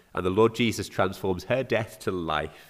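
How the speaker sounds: normal talking voice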